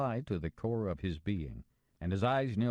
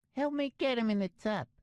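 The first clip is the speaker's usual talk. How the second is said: very high-pitched speaking voice. Reading a story, voicing Patera asking for help: high-pitched voice. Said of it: "said in his high-pitched voice".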